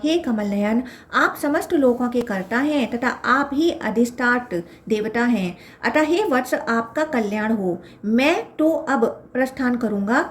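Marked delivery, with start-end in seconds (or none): none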